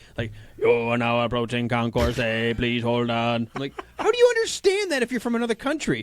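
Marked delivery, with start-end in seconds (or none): 0.6-3.5 flat, robotic, automated announcer voice. Recalling an airport shuttle announcement from when young, airport shuttle robot voice. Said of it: "a computer-animated voice telling you where to go".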